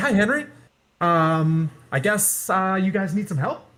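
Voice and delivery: sweet, sugary, high, gentle creature voice. Imitating a huge, dragon-like creature greeting someone, in a sweet voice. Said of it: "it does have kind of a sweet voice".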